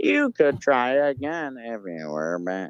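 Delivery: high, slow, nineties retro video game dialogue voice. Showing how the other players sound to them: imitating voices through old nineties game audio. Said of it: "sounds like people talking through, like, one of those old nineties games".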